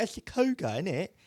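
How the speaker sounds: put-on British accent, pitched very high. Quoting what people in Britain say, the speaker uses a put-on British accent. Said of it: "a lot of people in Britain are like".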